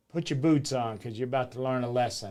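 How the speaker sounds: ordinary talk, nothing marked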